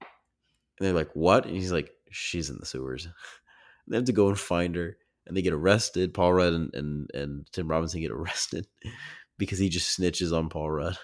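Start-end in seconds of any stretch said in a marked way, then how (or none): 2.1-3.1 play-acted very flat, low, monotone deadpan delivery. Recounting a favorite movie scene where a character answers the police, imitating a flat delivery. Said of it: "he just very very flatly goes".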